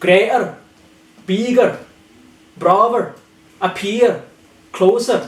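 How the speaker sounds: Scottish accent, every r trilled hard. Explaining scottish pronunciation, the speaker demonstrates words with a scottish rolled r. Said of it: "in Scotland they like really roll it".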